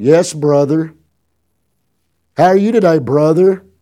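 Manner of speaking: laid-on-thick, sarcastic, preacher-style delivery. Answering a call on speakerphone, retelling a sarcastic preacher voice greeting. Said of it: "Being as sarcastic as I could be".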